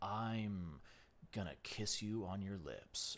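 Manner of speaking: low, loud, mock sexy, sultry man voice.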